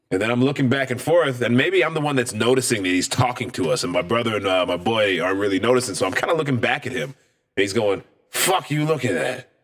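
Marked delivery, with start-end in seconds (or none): 8.3-9.4 mock tipsy, drunken barfly voice. Retelling how a man snapped at him and his friends, imitating a drunk man. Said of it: "he's drunk".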